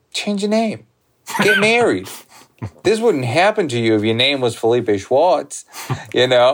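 put-on very thick, heavily laid-on Brooklyn accent. Retelling a helpful man's advice to the speaker, in a thick Brooklyn accent. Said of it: "in a very thick Brooklyn accent".

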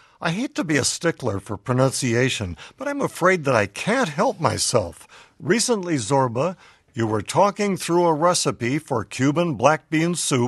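ordinary delivery

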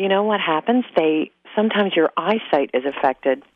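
normal talking voice

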